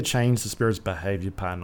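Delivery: ordinary talk, nothing marked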